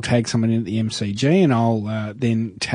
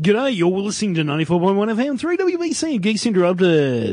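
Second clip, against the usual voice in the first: put-on radio announcer DJ voice; 9 semitones higher than usual. Asked to give them his radio voice, he goes: radio announcer voice. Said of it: "You're going to give us your radio voice".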